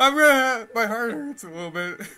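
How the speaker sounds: talking through laughter. Playing a game with others, laughing while talking. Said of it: "I'm laughing too much".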